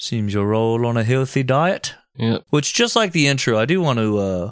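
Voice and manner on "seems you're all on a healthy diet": put-on somewhat English accent, lightly done. Describing an inspection, the speaker voices the figure everyone salutes in a somewhat English accent. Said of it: "I am using a somewhat English accent".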